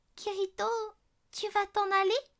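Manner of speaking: trembling, quavering voice with a high quaver. Narrator reading Silica asking Kirito whether he will leave, trembling voice. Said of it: "d'une voix chevrotante".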